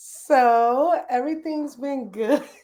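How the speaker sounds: very slow, drawn-out, formal put-on voice. Answering how things have been as a new homeowner: put-on formal interview voice. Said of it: "Why are you talking like that?".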